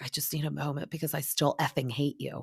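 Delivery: put-on upset whispering. Recapping a scene, quoting someone as they walk away, retelling an upset whisper. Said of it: "kind of whispering it".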